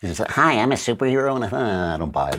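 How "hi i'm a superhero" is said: put-on small, girly little voice. Discussing a superhero movie's previews, mocking the lead actress: Brie Larson girly little voice. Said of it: "very girly little voice".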